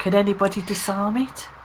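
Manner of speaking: whispering in a put-on character voice. Whispering to the group about a crossbow trap: whispering in character. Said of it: "And we whisper".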